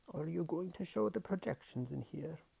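hushed, soft, slightly high, rough raspy voice. Reading aloud, the narrator voices the daemon asking a question: quiet female snow leopard voice. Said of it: "[name]'s daemon, a snow leopard, stood behind him. Okay, this is the voice of his daemon, which is a female snow leopard".

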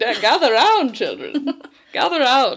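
very loud, grand, swooping showman voice. Recapping a scene where Wit gathers the kids around, in a grand showman voice. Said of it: "That was [name]'s showman voice".

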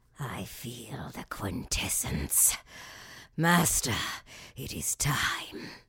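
whispered, breathy, hushed stage villain voice. Told to do a voice, the speaker puts on a villain voice. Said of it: "you have to do some of any voice".

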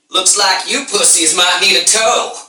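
hillbilly voice, pitched high. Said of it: "It's a hillbilly tow truck".

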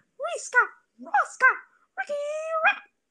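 shrill voice rising very high. Describing a cartoon rat character and how it talks: Ricky Rat voice. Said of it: "he talks like".

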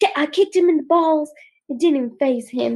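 run-on delivery, all in one go. Retelling how she explained kicking him, imitating talking so fast. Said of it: "she's talking so fast, and explaining it so fast".

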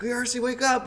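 mock screaming. Retelling banging on older brother's door to wake him, retelling a scream. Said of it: "I'm like just screaming at him".

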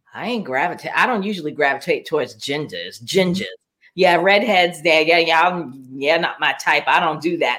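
sniffy, dismissive tone full of disdain. Retelling what someone said in a clip: imitating a disdainful tone. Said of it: "She said it with such disdain".

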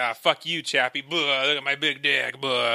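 mock macho show-off bravado. Imitating a character showing off a big weapon: imitating a macho show-off. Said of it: "just showing off his will".

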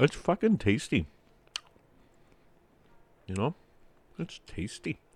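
speaking with full mouth. Speaker eating while addressing listeners, talking while eating. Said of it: "Sorry, I'm eating".

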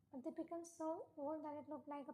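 ordinary delivery, nothing marked

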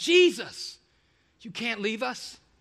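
mock desperate, frightened begging, drawn out. Retelling the disciples' reaction to Jesus leaving: imitating panicked disciples. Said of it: "they're utterly panicked".

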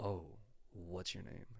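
hushed, very soft, put-on altered voice. Speaker acts out bumping into someone and asking their name: changed, put-on voice. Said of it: "Maybe not quite in that voice".

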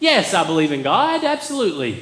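deliberately bad, swooping sarcastic tone. Acting out a churchgoer asked at work about faith: bad sarcastic voice. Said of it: "my sarcastic voice is bad".

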